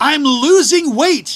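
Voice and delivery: loud, high-pitched, complaining shout. Retelling a cruise passenger's complaint to the buffet chef: imitating a man yelling. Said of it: "he started yelling".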